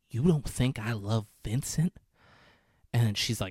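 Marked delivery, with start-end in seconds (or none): 0.1-1.9 mock angry delivery. Retelling a movie scene, a man's reply: imitating an angry character. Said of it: "he gets angry".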